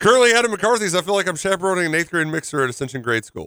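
rushed, excited, loud, high-pitched rattled-off reading. Reading a listener's text aloud on the show: reading very fast. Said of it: "I don't know why you read it so fast".

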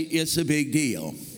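slow Texas drawl with stretched-out words. Speaker telling the audience to say it to their neighbor, sounding like from texas. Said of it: "I just sound like I came from Texas".

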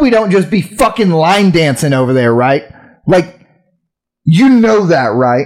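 put-on heated complaining. Retelling what he said to the girl bringing food, acting out being super pissed. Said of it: "I was like super pissed".

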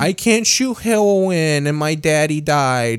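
high, slow, bratty, sneering mocking voice. Mocking a show character's complaint: mocking a character. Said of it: "You sound like me. Like, I'm mocking".

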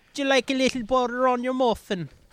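botched fake Jamaican accent, sounds Scottish. Quoting a line among friends, in a bad Jamaican accent that sounds Scottish. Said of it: "that was like Scottish. That wasn't Jamaican".

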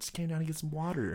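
fake yawn while talking. Retelling how he answered his mom after turning off the Xbox, retelling a fake yawn. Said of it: "let me like stretching and yawning".

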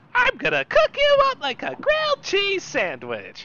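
very high, wildly swooping cartoonish voice. Doing a quick joke impression while mocking a politician: Joker impression. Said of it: "since I've done my Joker impression".

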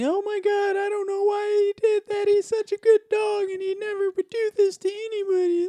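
put-on, very high, weepy, tearful sobbing. Retelling being attacked by a dog, the speaker acts out the lady's words: imitating the lady crying. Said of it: "Like crying and".

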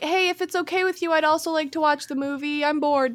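put-on, overly courteous, mannerly, very polite voice. Retelling how a film character speaks: imitating someone very polite. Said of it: "He's so polite".

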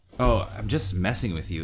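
ordinary delivery

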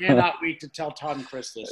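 ordinary talk

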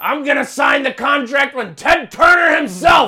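yelling high and hard. Retelling a wrestling promo, doing a good Vince McMahon impression. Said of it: "you do a good impression".

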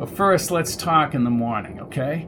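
ordinary delivery, nothing marked

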